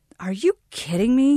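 stunned, incredulous. After proposing, a man answers the woman's question; dumbfounded.

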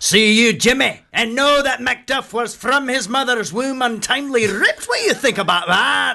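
Scottish accent pitched very high. Asked by the host for a line from the production, giving it in a scottish accent. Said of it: "I do enjoy the Scottish voice".

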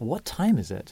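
put-on mumbled delivery. Woken at 2 a.m. by his son, a father retells his reply: retelling a mumble. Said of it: "I mumbled".

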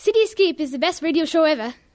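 British accent. Asked on air to say a radio show line, uk accent. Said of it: "Do it for me".

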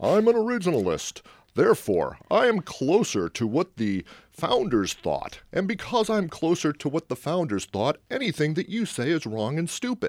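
lofty, self-important, pompous tone, swooping high voice. Speaker caricaturing a view in a discussion, in a mock-pompous voice. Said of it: "I'm going to put on my, you know, pompous voice here".

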